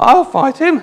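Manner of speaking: put-on high-pitched grandmother voice. Voicing David before King Saul, in his grandmother voice. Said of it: "in the voice of his grandmother, his nana".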